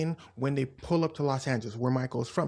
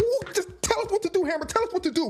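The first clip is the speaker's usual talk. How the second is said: mock, very high, worked-up, agitated voice; 4 dB louder than usual. Retelling how the men behind [name] got agitated: imitating agitated men. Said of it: "the dudes behind [name] start getting way more agitated".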